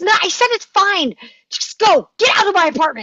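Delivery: very high, loud, abrupt snapping tone. A woman refuses a man's help cleaning up a broken lamp, snapping. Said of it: "Rebecca just snaps".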